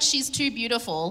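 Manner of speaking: ordinary talk, nothing marked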